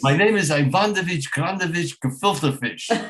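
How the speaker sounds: exaggerated Yiddish-inflected accent, played for laughs.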